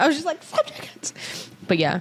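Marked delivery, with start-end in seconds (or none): 0.4-1.5 mock hushed, airy, whispered shout. Retelling screaming in the car: retelling screaming in the car. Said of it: "screaming in the car".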